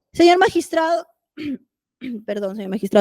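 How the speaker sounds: voice cracking. Speaker addressing the magistrate, voice cracking. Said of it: "hasta que se me corta la voz".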